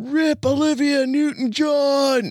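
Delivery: sudden, very high, yelled-out scream. Retelling a guy behind them during a Grease trailer: mock-screaming out. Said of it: "suddenly screams out".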